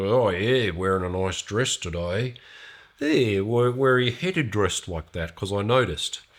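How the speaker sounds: mock masculine voice. Retelling asking a woman where she is headed, in a manly way. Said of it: "in a manly kind of way".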